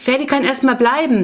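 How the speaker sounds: high-pitched, bubbly, excited gushing. Clara dashes into Jonas's room after her father gives in, bubbling over. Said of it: "sprudelte sie heraus".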